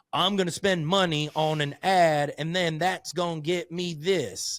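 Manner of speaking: high fake Southern accent. Speaker voices a short-sighted business owner's thinking in a Southern accent. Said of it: "I don't know why I just spoke with a Southern accent".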